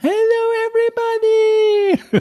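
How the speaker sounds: terrible, very high, squeaky host voice. Imitating a contest presenter's greeting: imitating a host's terrible high voice. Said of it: "sie hatte eine ganz furchtbare Stimme".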